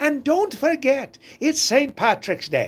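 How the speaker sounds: bad put-on Irish accent, pitched way up. YouTuber signing off his video on Saint Patrick's Day, terrible Irish accent impression. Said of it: "that was a terrible, terrible yeah, impression of an Irishman".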